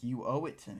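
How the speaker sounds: put-on pissed-off angry voice. Retelling a repair-payment argument, imitating someone pissed off. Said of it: "he's pissed off about it".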